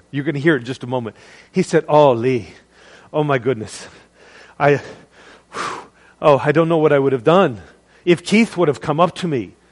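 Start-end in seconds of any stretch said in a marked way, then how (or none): 1.8-9.4 put-on Irish brogue accent in a man's voice. Retelling what a man from the audience said afterwards, in an Irish brogue. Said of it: "he's got this beautiful Irish brogue".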